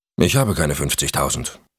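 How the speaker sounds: plain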